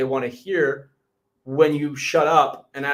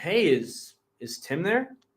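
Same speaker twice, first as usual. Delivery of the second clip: genuinely curious, wondering, inquisitive tone; 3 semitones higher, 4 dB quieter than usual. Julian demonstrates how he asks for someone by name: very curious tone. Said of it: "I'll come in with a very curious tone".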